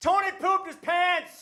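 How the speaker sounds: put-on very high, carrying yell of a child. Retelling a school trip story, imitating a kid shouting across the woods. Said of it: "his friend shouted across the entire woods".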